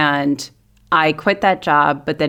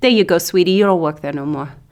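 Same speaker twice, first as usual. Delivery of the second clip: put-on Brooklyn Italian accent in a woman's voice. Retelling how Mama Segreto handed back the phone; imitating her Brooklyn Italian accent. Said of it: "who is like very Italian and very Brooklyn".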